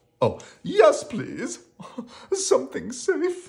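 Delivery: very high, pleading, begging voice. After a risky wish, a companion echoes the narrator's suggestion; begging. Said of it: "begged Rocky".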